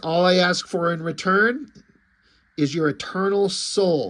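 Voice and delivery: ordinary talk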